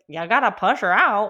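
put-on grumpy, grouchy, no-nonsense old nurse voice. Retelling the delivery, speaker quotes the nurse in a grouchy old nurse voice. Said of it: "just like old kind of grouchy nurse".

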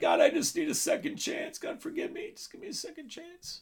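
very high, tearful, crying pleading. Retelling a repentant man's prayer at a meeting, acting out someone crying. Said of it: "he's crying".

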